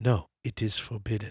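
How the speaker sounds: put-on English spoken with a Chinese accent. Retelling what Byron said over and over, Byron's Chinese accent. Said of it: "in his Chinese accent".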